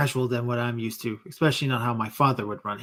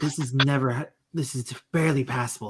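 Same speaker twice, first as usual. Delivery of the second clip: muttering, mumbling under breath. Voicing a bossy crewmate judging the ship: muttering under breath. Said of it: "muttering under her breath".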